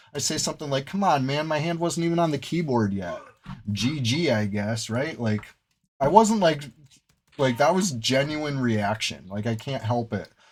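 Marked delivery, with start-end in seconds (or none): 0.9-4.9 play-acted disappointed, let-down, complaining tone. Retelling own complaint after a match: imitating own disappointed voice. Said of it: "You could hear the disappointment in my voice".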